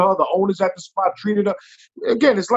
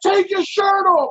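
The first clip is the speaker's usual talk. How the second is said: put-on high, loud yelling; 12 semitones higher than usual. Retelling how he yelled in a club to remove the shirt: imitating Tracy Morgan yelling. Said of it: "fucking yelling in my ear".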